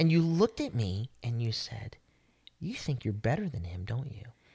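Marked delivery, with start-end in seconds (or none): 2.6-4.2 put-on calm tone, much quieter. Quoting back to the listener what they once said, imitating a calm observation. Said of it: "There wasn't hostility in your voice".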